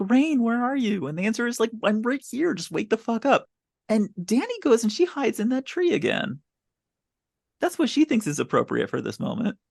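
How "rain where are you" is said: mock, loud, calling-out yell. Describing a scene, acting out her calling out for Rain: retelling a yell. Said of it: "she's yelling like".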